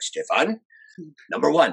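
put-on strong Swiss accent. Retelling his dad's advice before his first date, in a strong Swiss accent. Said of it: "he had a strong Swiss accent".

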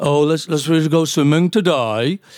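put-on Birmingham accent. Speaker explains how he learned to hear accents, demonstrating a Birmingham accent. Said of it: "another strange accent. All right, Birmingham".

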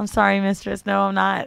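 put-on apologetic voice. Acting out a scene at an ATM, addressing the mistress: role-playing an apologetic client. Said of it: "I'm in there".

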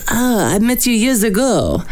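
high, put-on French accent. Telling a story about a guy from years ago, quoting him in a french accent. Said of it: "That's such an authentic French accent".

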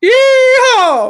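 put-on Texan holler. Retelling what they said after going completely texas last night, put-on texan yee-haw. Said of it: "And I was like".

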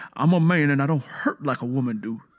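swaggering, defiant, angry, boastful bravado. Narrator reading a man's retort before he leaves the barn, with bravado. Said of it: "Curly said with bravado before marching angrily".

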